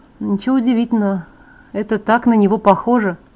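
ordinary delivery

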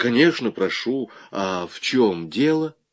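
usual speaking voice

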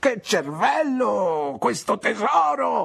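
very high, slow, drawn-out cry. Narrator voicing Peggotty reacting to a suggestion: crying out. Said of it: "gridò Peggotty".

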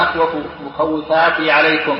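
plain

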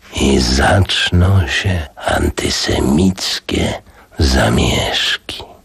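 musing, pensive. A narrator reading a novel aloud voices a character's reply, thoughtfully. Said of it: "rzekł w zamyśleniu".

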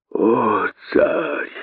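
hissing plaintively. Narrator reads the cross-eyed one's answer to the tsar: plaintive hiss. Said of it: "жалобно прошипел косой".

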